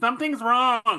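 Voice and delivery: loud, very high-pitched yelling. Game master voicing Heliodor as he lets go of the ball: yelling back. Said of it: "he yells back".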